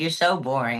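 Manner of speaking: plain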